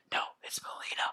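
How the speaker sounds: hushed whisper under the breath. Retelling a broadcast moment where a co-caster corrects a name: imitating Tasty whispering. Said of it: "you hear Tasty whisper".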